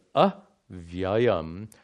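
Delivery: prefix a stressed and split from avyayam. Explaining pronunciation of Brahman is avyayam, stressed, separated prefix a in avyayam. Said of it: "I'm again stressing these as to make the point. You don't pronounce the words like this".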